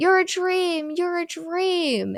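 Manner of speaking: put-on very high, drawn-out, stretched scream. Retelling a horror movie scene, imitating Courtney screaming at the killer. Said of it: "Courtney starts screaming at him".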